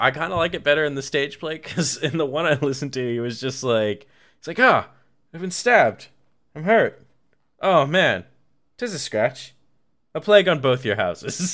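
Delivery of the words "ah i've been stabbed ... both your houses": casual, nonchalant, swooping offhand delivery. Retelling how a stage play actor said the dying lines: imitating a casual delivery. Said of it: "casually drops it".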